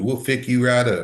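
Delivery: put-on thick Georgia Southern accent. Retelling a phone call with a man from georgia, thick southern accent. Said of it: "had a really thick Southern accent".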